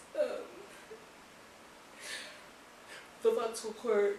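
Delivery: speaking through a yawn. Listing books she rated for viewers, yawning while speaking. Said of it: "Sorry for yawning".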